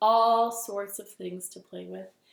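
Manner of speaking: plain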